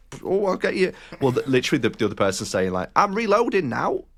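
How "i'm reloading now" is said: put-on mixed-up blended northern English accent, very high-pitched. Describing a game, quoting what the other player says: weird blended northern accent. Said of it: "in like a weird kind of blended northern accents".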